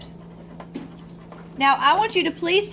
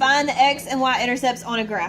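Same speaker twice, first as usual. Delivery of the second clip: ordinary talk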